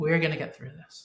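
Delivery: calm, soothing, reassuring voice. Showing how to add a term of endearment: calm reassuring tone. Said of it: "the fact that I'm calm".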